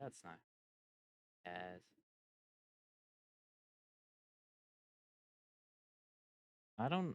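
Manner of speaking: talking really quietly, hushed. Noticing mid-sentence that you keep changing how you talk, talking really quietly. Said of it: "I'm talking really quiet".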